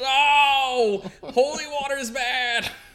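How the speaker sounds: mock very high, very loud, shrill teen tantrum. Acting out a villain as a moody teen: Dio as angry teen yelling at dad. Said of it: "like an angry, moody teen, like, yelling at his dad".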